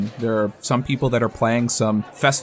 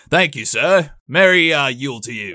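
put-on Yorkshire accent, louder; 3 semitones higher, 4 dB louder than usual. Speaker voices guards thanking someone, in a Yorkshire accent. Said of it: "Are these guards from Yorkshire?".

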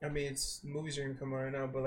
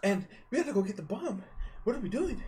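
fast, breathless, pitched-up speech, gasping for air; 7 semitones higher than usual. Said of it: "that's my [name]".

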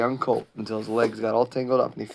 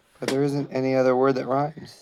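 ordinary delivery, nothing marked

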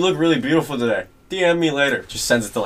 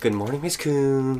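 put-on obnoxious, needling, deliberately annoying schoolkid voice; 7 dB quieter than usual. Retelling how students greeted a disliked teacher: imitating an annoying greeting. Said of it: "as annoying as you could do it".

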